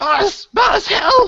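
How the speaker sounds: very high, loud, shrieking creature screech. Voicing a kobold shouting over its shoulder to the next room: kobold screeching for help. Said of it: "you hear the kobold in Draconic screech out".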